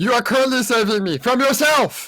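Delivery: half-shouted, mildly yelled. In a tabletop game, a character screaming at a companion as she runs out: screaming. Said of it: "as you're screaming that behind you".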